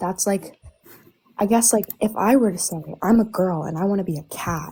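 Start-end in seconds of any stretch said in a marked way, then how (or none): none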